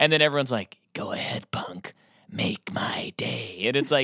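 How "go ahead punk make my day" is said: hushed, breathy, slow, deliberate whispered delivery. Mocking how dads imitate a tough movie cop line: imitating Clint Eastwood as Dirty Harry. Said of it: "all of them think they can talk like this".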